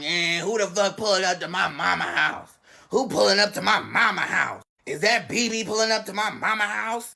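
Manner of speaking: scratchy voice of a small woman. Speaker retelling a late-night moment, quoting a lady: little scratchy lady voice. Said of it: "This lady with a little scratchy voice on".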